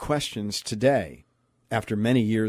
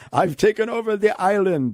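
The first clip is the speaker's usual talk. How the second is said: put-on very high, loud Jamaican accent; 10 semitones higher, 5 dB louder than usual. Quoting the new dictator from a movie clip: Jamaican accent. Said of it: "why am I sounding like a Jamaican?".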